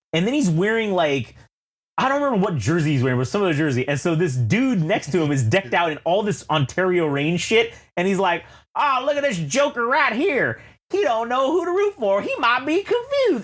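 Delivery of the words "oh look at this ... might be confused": put-on Southern accent, pitched high. Retelling what a stranger next to a man said about him, southern accent. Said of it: "he said it with like a goddamn Southern accent".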